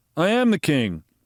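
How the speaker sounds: half-hearted, flat attempt at enthusiasm. You point out the same inflection in Trump's voice; do a Trump voice, failed attempt at enthusiasm. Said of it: "I hear that same inflection".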